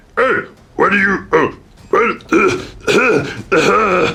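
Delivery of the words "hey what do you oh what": voice sounding like an orc. A character clears their head after a blinding light, sounding like an orc. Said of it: "why do I sound like an orc?".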